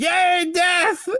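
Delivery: wild, delirious glee in a very high squeal. Voicing a character found inside a creepy cottage: deliriously happy Doctor Deputy. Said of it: "absolutely deliriously happy Doctor Deputy going".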